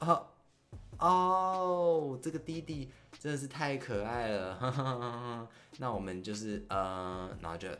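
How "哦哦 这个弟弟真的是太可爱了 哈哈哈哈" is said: acted awkward, high, loud laughing-it-off gush. Retelling the host's reply after the speaker screamed a star's name, imitating the host laughing it off. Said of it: "他就打哈哈过去了".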